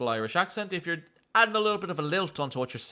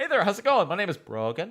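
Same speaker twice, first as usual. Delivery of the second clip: friendly put-on Irish accent, pitched up; 5 semitones higher, 3 dB louder than usual. Greeting listeners and giving a name, in a put-on Irish accent. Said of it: "Just say it with an Irish accent".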